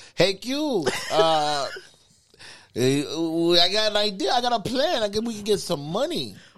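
drawn-out put-on Spanish accent. Retelling what a lady said to the speaker, Spanish accent. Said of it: "do like the Spanish accent".

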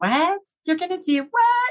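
mock crying, very high pitch, tearful disbelief. Retelling her reply to her daughter, retelling crying while talking. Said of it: "and I'm crying".

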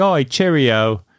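stiff, overdone, far-from-casual put-on British accent. Explaining how to do a british accent, showing the wrong way: overdone british accent. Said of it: "you can't be like".

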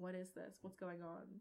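hushed stage whisper, half-whispered. Half-whispering aside to a companion about suddenly kind hosts: half-whispering aside. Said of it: "whispering over to the side".

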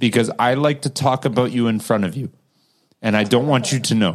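normal talking voice

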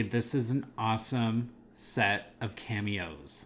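ordinary talk, nothing marked

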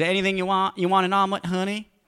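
very high, sassy diner waitress voice. Imagining a diner waitress pouring coffee: imitating a sassy diner waitress. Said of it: "the sassy, uh, semi-overweight waitress behind the counter pours me a cup of coffee and goes".

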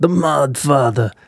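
failed mock smoker voice. A co-host greets a guest by his nickname in a bad smoker-voice impression. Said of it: "That was a bad impression".

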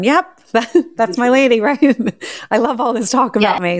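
amused, high, playful voice with chuckles throughout. Imagining a man listening to the show, the speaker voices him, imitating him chuckling.

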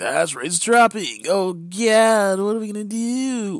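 mock panic, high-pitched and loud.

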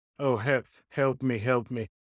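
put-on crying. Mocking a player who fakes being hurt to the ref: mock crying for help. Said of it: "Sounding like that bitch from New York".

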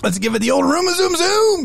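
high-pitched cartoon car voice. Doing an impersonation on request, in a Speed Buggy impression. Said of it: "I have to do an impersonation of".

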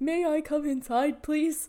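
high cartoon dog voice. Describing a movie's talking dog, the speaker does a Doug the dog impression. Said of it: "This is actually like a pretty good like impression".

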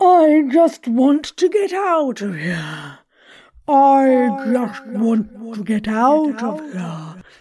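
booming storybook giant voice, I drawn out. Trying out different voices, the speaker repeats a line as a giant character. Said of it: "how about a giant character?".

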